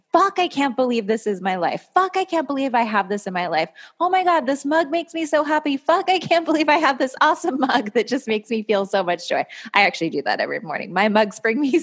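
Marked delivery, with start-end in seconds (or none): 0.1-9.4 obnoxiously over-the-top gushing gratitude, pitched-up and swooping. Showing a morning gratitude practice: almost obnoxiously extra gratitude. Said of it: "this almost obnoxious extra way".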